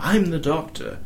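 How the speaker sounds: posh dramatic voice. Describing the sort of voice an actor had, like an older doctor: posh, dramatic voice. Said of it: "poshy, sort of dramatic-y voice".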